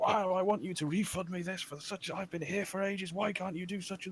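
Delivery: mock high-pitched, irate, angry shouting. Recounting a scene at the checkouts, the speaker imitates a shouting customer. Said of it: "let him shout at me for 10 minutes".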